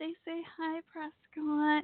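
put-on sweet baby talk, high and softly cooing.

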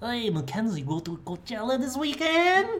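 excited Eastern European accent.

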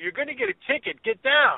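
mock very high, rising shout. Retelling how a guy yelled at her: imitating a man yelling. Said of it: "this guy starts yelling at her".

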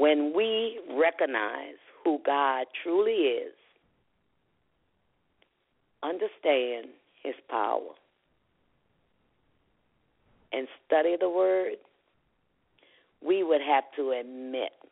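deliberately slow delivery. Reading a passage aloud after announcing it, very slow. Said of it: "I'm going to say this slow".

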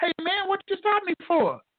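mock very high, confrontational, attitude-filled tone. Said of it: "All of a sudden there's an attitude".

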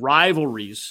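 ironic, slow rivalries, as if in quotes.

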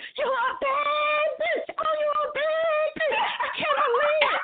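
very high, shrieking, excited scream. Retelling a late-night phone call from a sister, imitating her screaming. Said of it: "she just starts screaming".

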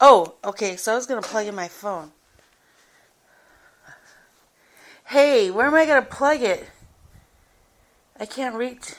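out of breath, winded. Speaker apologizing while trying to plug in a phone, out of breath. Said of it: "I'm totally out of breath".

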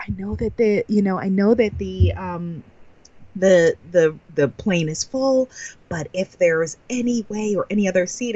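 hushed half-whisper, halting and stumbling over words. Retelling asking a flight attendant for any other seat: retelling a half-whisper. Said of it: "whispering to him".

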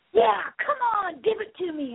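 put-on all-out, very high, wild screaming. Recalling facing the lightning, speaker acts out their past self; retelling a scream. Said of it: "I'm just screaming out".

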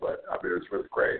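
mock choked-up voice. Acting out an audience member after a show: imitating a choked-up audience member. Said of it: "I'm choked up, man".

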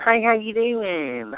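slow Southern accent. Demonstrating the accent mom picked up in the South: southern mama accent. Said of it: "This is my southern mama accent".

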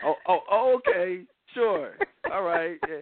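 high, sarcastic, sure-sure go-along agreeing tone. Acting out a man agreeing to tell his partner: sarcastic agreement. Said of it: "as I say that, as I give the thumb up, you know, the sarcastic thumb".

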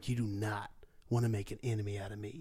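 low, rough, raspy voice, very quiet. Quoting what someone said when going after another person, imitating a raspy voice. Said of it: "Real raspy".

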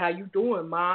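small little man character voice. Retelling an audiobook narrator voicing D, D's little man voice. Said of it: "she did the little man voice".

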